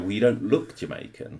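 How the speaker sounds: ordinary talk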